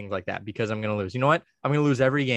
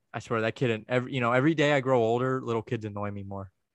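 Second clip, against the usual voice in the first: ordinary talk, nothing marked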